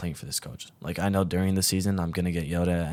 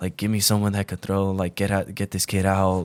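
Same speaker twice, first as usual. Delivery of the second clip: put-on screaming; 4 dB louder than usual. Recalling his coach screaming at him in front of everyone, imitating the screaming coach. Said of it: "the coach is like screaming at me like".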